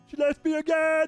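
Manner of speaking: very high, loud, squeaky puppet frog voice. Voicing a creature in a game: Kermit the Frog voice. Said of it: "it's a really good Kermit impression".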